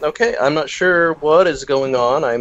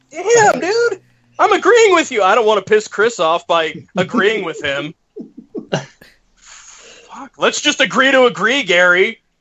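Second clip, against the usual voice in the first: high, swooping angry yelling, pitch jumping around; 7 semitones higher than usual. Joking with another speaker, mock-angry yelling. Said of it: "I don't know why you're yelling at me again".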